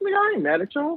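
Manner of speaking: high-pitched voice. Acting out how the listener would answer an invitation, in a high-pitched voice. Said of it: "Your voice get all high".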